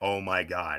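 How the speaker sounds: low mutter under the breath. Retelling their own reaction when one wrestler hit another with a chair: retelling muttering under breath. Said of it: "under my breath".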